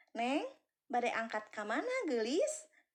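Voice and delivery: kindly, warm, welcoming, friendly asking tone. Intonation lesson example, asking where someone is going: friendly. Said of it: "nanyanya itu dalam kondisi saya itu ramah".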